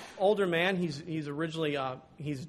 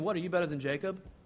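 put-on sarcasm, faster. Speaker retells the woman's opening words to Jesus, mock-sarcastic retelling. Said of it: "Sort of this sarcastic".

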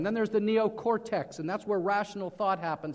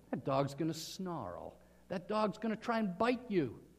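plain

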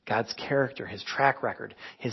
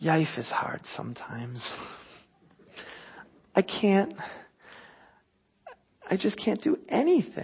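mock-sad toddler voice, pitched higher; 6 semitones higher, 4 dB quieter than usual. Quoting Aria, your three-year-old daughter, after being told no, imitating Aria sadly. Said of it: "she'll just say so sadly".

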